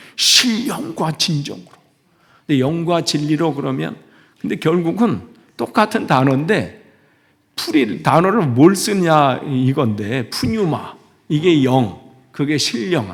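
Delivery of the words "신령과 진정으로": strong forceful stress on 신 of 신령. Showing how 신령과 is usually said: strong stress on 신. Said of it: "우리가 신령과 막 신자에다 힘을 주잖아요".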